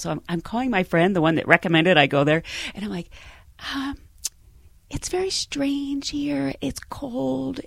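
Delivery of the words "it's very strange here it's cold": very slow, cold, drawn-out, high whisper. Retelling a phone call to a friend from the hall, imitating own whispering. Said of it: "Why are you whispering?".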